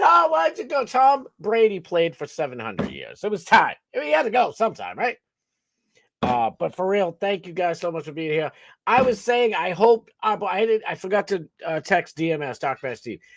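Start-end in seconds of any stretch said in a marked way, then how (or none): 0.0-0.8 fake blubbering, voice way up high. Lamenting that a player left them, mock crying. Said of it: "I'm not really crying".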